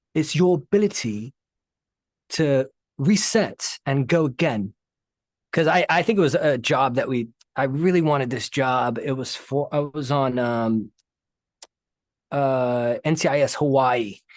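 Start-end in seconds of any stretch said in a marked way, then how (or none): 0.2-4.7 laid-on, put-on, upper-crust super posh accent. Retelling what a man told Phil, imitating a super posh voice. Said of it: "he's like super posh".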